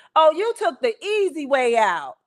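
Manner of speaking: shouting loudly with swooping pitch. Coming home from the hospital after a cesarean, retelling a woman's shout. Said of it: "she shouts at me".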